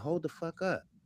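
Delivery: furious, fed-up angry outburst. Retelling first seeing the AI's made-up story: retelling an angry reaction. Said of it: "how goddamn mad I fucking was".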